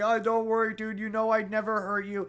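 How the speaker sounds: high, tearful crying voice. Retelling a film scene, a character speaks while crying: imitating crying while talking. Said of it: "crying, like".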